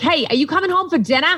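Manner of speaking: high-pitched voice with a Boston accent.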